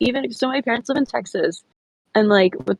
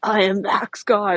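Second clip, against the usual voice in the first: heavy metal-style voice. Speaker shows how their own name sounds in their head, metal voice. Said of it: "a metal voice for some reason".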